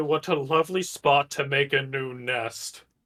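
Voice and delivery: deep put-on voice of a dragon. Tabletop player casting an illusion that speaks, in a booming draconic voice. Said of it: "A booming, draconic voice is going to say".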